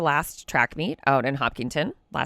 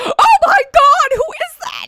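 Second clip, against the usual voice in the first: mock panicked, very high, loud, drawn-out alarm; 9 dB louder than usual. A parent recounts hearing a male voice next to their child on the phone, retelling own panicked words. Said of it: "I'm panicking".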